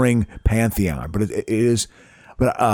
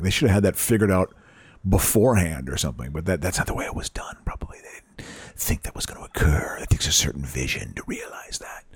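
sinister put-on LA voice, much lower, quieter, faster; 5 semitones lower, 6 dB quieter than usual. Speaker talks about a TV series in a sinister calculating LA voice. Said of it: "That's my sinister calculating LA voice".

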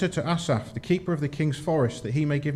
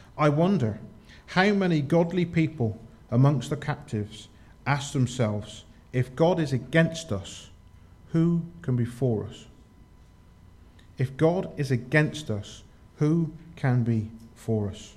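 very slow, deliberate, drawn-out delivery. Speaker poses a question to listeners, wanting to get it right; very slowly. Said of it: "I will say this very slowly".

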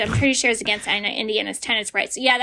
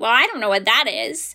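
snide, condescending, dismissive tone. Retelling the property manager's answer when shown a photo, mock-snide property manager. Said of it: "Property manager said snidely".

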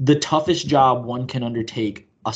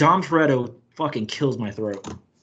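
ordinary talk

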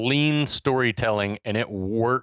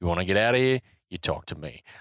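laid-back, easy delivery; 4 semitones lower than usual. Recalling a movie advert line: laid-back Mel Gibson voice. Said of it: "laid back saying".

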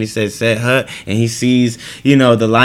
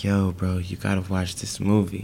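put-on really soft voice, quieter, slower; 3 semitones lower, 10 dB quieter than usual. The speaker quotes a friend recommending something, imitating a friend's really soft voice. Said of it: "Your friend talks in a really soft voice".

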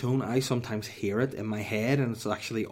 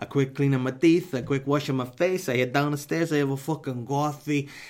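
put-on Italian accent in English; 4 semitones higher, 5 dB louder than usual. Speaker recounts their morning routine: Italian accent. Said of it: "I sound so much like an Italian".

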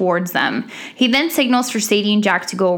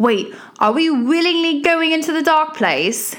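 put-on English accent, raised pitch; 7 semitones higher than usual. Recapping a scene, the speaker voices Jack in an English-accented Jack impression. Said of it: "my Jack impersonation with my English accent".

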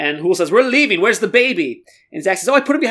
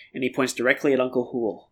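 ordinary delivery

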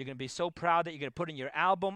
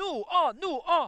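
very high, loud, drawn-out scream; 11 semitones higher, 6 dB louder than usual. Retelling how the Rebbe found his room broken into, imitating the Rebbe screaming. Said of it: "the Rebbe starts screaming".

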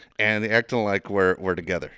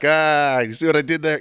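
put-on laughing speech, higher and louder; 7 semitones higher, 8 dB louder than usual. Retelling his son in the parking lot: imitating someone laughing while talking. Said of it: "He dies laughing like".

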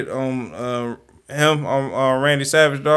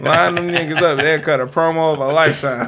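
ordinary delivery

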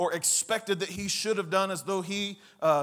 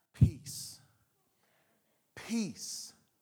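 soothing, soft, breathy near-whisper; 3 semitones higher, 5 dB quieter than usual. Retelling his words to the terrified followers, acting out a calming voice. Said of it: "That's a calming voice".

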